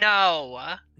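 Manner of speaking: booming, amplified voice, stretched long. Answering the masters through a door: magically boomed voice. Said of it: "I thaumaturgy my voice saying".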